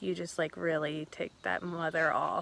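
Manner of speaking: soft mutter under the breath, aside. Retelling what a friend said while walking past people: imitating someone muttering under breath. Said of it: "under her breath".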